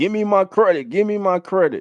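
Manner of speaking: high, whiny, blubbering fake crying. Picturing someone watching now and demanding credit, in mock crying. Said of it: "crying like".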